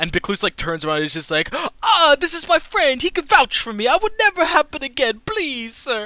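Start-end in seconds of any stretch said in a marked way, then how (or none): 1.5-6.1 very high, loud, desperate pleading. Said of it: "begging this".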